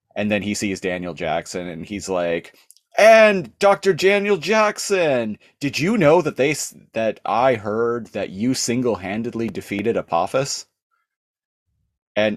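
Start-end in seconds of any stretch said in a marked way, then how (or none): 3.0-10.7 put-on excited, eager, flattering gush. Retelling Nereus greeting Daniel Jackson: imitating Nereus flattering. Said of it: "flattering them".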